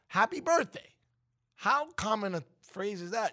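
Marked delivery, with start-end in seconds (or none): 0.1-0.8 mildly excited, pitched a little higher. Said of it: "can you sound a little excited?".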